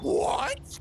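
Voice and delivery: very high, loud, shocked yelp.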